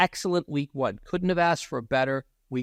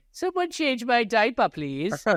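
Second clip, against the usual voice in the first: very high put-on ninety-eight-year-old voice; 10 semitones higher than usual. Mocking another speaker's delivery as a ninety-eight-year-old: put-on ninety-eight-year-old voice. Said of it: "like you're ninety-eight years old".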